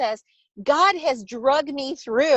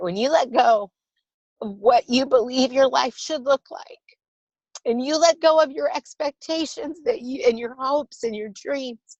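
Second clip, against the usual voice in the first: tearful, on the edge of crying, tearing up mid-sentence. Speaking to listeners and admitting you're about to cry: starting to cry. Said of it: "I'm going to cry a little bit here".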